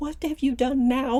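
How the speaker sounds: ordinary delivery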